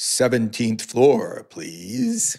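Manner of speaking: put-on, swooping radio announcer voice. Retelling how a man delivering a package acted like on-air talent in the elevator: radio voice. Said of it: "in that radio voice".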